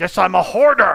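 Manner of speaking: loud, high-pitched, direct yelling. Acting out how a written message came across to them: yelling. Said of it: "you were like yelling it at me".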